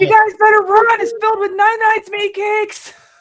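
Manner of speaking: shouting. Warning the others in character about a trapped case: yelling a warning. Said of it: "me yelling".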